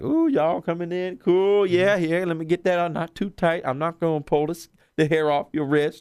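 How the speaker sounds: put-on happy voice. Retelling what the woman putting on wristbands said, imitating someone all happy. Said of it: "she's like all happy".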